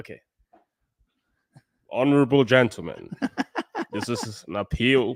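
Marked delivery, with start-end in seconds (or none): 1.9-5.2 put-on American accent, swooping pitch. On a fundraising stream, asked to give the american voice, the speaker does an american accent. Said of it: "Give them that uh, American voice".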